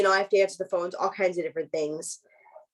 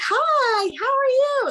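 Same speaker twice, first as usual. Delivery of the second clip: polite, very high customer service voice; 4 dB louder than usual. Talking about what they call the customer service voice, the speaker demonstrates their customer service voice. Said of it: "I call it the customer service voice".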